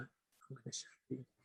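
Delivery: mock muttering under breath. Retelling words said quietly to a girl during an interview: retelling a mutter under breath. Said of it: "under my breath saying to the".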